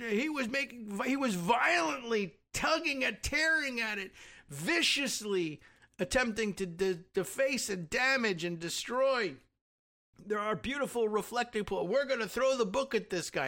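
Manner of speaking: put-on drunken voice. Recounting a woman's claims about witnesses, the speaker does a mock drunk voice. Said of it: "in her stupid drunk voice".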